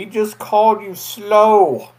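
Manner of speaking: booming, very loud, very slow shouted delivery. Voicing a character calling out behind another: yelling in character. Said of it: "Gurdon's behind you yelling".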